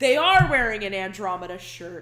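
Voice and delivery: very loud call-out with wide pitch range.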